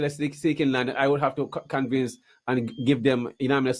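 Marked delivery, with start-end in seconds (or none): none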